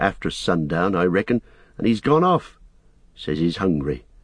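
plain reading voice

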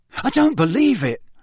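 stunned voice. Audiobook narrator reading Ron's line as students file back, in a stunned voice. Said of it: "Ron said in a stunned voice".

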